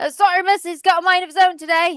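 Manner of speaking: deliberate, fake English accent, slow and high. Voicing a character apologizing to a woman about his horse: put-on English accent. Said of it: "my accent is gonna change dramatically".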